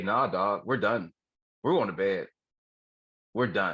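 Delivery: ordinary talk, nothing marked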